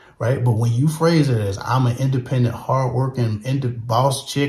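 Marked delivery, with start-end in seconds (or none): none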